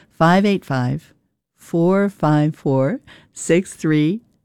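a little slowed down. Host repeating the phone number for potential supporters, a little slower. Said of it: "I'll say it a little slower".

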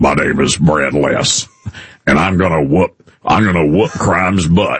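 slow, intense, hard-line sheriff voice. Retelling what a sheriff candidate said at an event: imitating Brad Less, intense sheriff talk. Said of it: "he just talks like a sheriff".

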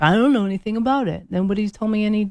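vague, clueless know-nothing tone. Imitating someone who says nobody told them anything: imitating an uninformed person. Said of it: "They sound just like that too".

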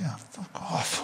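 very soft, slow mutter under the breath. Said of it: "like that, under my breath".

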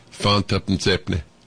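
low Yorkshire market trader accent, Leeds stallholder style.

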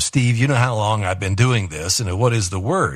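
usual speaking voice

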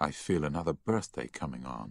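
plain reading voice

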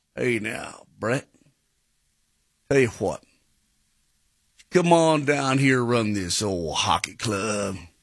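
low, easy Southern Tennessee accent. Playing a Nashville Don Corleone addressing Brett, in a Tennessee accent. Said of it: "Is this your Tennessee accent?".

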